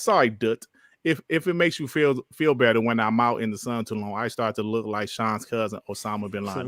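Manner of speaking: ordinary delivery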